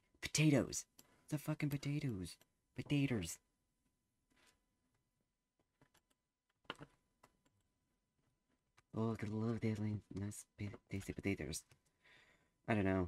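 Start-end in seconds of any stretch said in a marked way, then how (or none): 0.2-11.6 botched, failed put-on Irish accent. Talking through what to plant, in a bad fake Irish accent. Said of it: "I'm trying to do a Irish accent".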